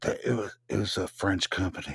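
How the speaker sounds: hushed whisper. Not wanting to call them out openly, the words whispered. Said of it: "I'm gonna whisper it".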